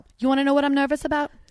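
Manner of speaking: tried, put-on New Jersey accent. Playing a film scene, answering a nervous scene partner, in an attempted Jersey accent. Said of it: "I'll try to do a Jersey accent".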